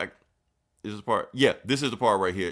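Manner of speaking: ordinary talk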